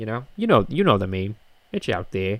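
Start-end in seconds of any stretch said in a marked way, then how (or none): none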